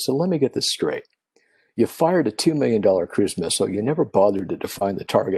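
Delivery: ordinary delivery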